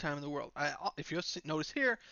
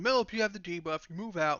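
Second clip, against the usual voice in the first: put-on screaming, yelling; 3 dB louder than usual. Retelling people on Discord yelling at him about a debuff: imitating people screaming. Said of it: "they start screaming".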